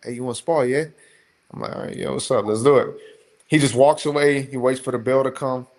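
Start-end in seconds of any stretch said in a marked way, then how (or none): 0.0-0.9 put-on easygoing, casual, light English accent. Retelling how a fellow fighter asked to spar, imitating Jack's English accent. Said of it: "So he got his little accent".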